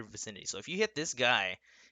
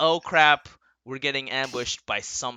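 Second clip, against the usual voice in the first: ordinary talk, nothing marked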